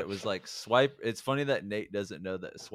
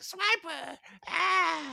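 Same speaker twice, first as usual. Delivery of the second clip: put-on gremlin voice, much higher pitch. Retelling how they auditioned for Swiper, in a gremlin-style Swiper voice. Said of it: "kind of a gremlin style".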